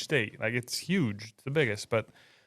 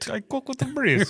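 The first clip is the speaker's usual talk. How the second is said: put-on very high voice with a vague Italian accent; 13 semitones higher, 4 dB louder than usual. Imagining a rival team sneaking in and voicing them, in a seemingly Italian accent. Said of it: "did I sound Italian?".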